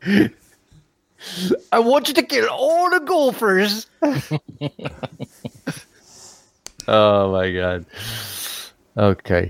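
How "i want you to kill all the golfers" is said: high Scottish brogue in a character voice. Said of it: "Groundskeeper Willie".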